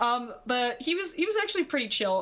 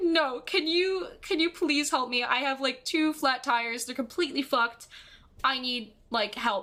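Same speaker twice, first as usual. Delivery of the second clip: put-on bawling, sobbing, crying. Retelling asking a passing cyclist for help, imitating own sobbing. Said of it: "I'm just, like, bawling".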